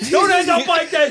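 high, loud mock screaming.

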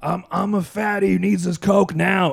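slow, loud, drawn-out, rough bellowed yell. Describing a man yelling during his audition, imitating someone yelling. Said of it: "he's just yelling like".

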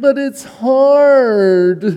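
put-on high valley girl voice, words drawn out hard. Acting out the valley girl's reply to encouragement, valley girl voice. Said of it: "That's what the Valley Girl says".

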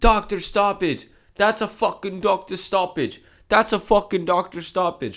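desperate, very high-pitched, loud screaming. Retelling a man in pain screaming while sitting on the ground; imitating someone screaming. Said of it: "He's screaming that from sitting on the ground".

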